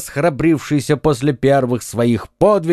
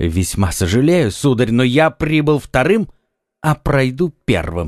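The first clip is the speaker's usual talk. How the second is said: ordinary delivery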